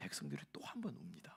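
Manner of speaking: dramatic, low, hushed whisper.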